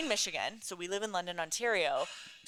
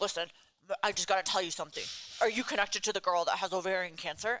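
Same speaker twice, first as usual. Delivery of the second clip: put-on gruff old man voice. Retelling a phone call from a stranger to the gym: imitating a gruff old man. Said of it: "this gruff old man".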